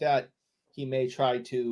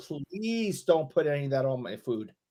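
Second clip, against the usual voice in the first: mock, pretend pleading tone; 3 semitones higher than usual. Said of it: "that's a beg".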